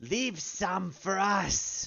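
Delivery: rasping, very high-pitched, slow croaking voice. Voicing a figure calling from behind during a fight: raspy voice. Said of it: "You hear a raspy voice from behind you".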